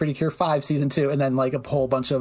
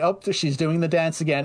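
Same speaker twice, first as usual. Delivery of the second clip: ordinary talk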